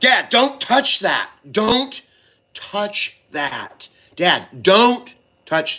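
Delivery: stern, forceful, loud, pitched way up. Demonstrating how they talk to their dad when he touches things: loud, forceful scolding. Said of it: "I get louder and just more forceful".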